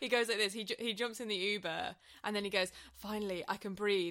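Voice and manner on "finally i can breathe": relieved speech on a big sigh. Retelling how he jumps in the Uber: imitating a relieved sigh. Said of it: "lets out a big sigh".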